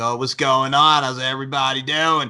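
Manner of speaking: chill, laid-back surfer-dude voice. Imitating how a guy from Stepsister from Planet Weird talked: surfer-dude voice. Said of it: "All he did was talk like this".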